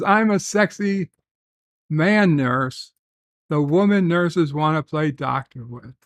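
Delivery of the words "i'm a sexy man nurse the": usual speaking voice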